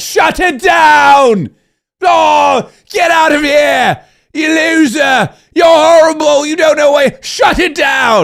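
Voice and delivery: high, slow, deliberate shouting tirade. Imagining rolling into Congress on the first day, doing a Gordon Ramsay impression. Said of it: "Gordon Ramsay".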